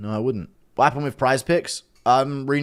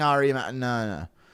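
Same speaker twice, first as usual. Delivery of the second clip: normal talking voice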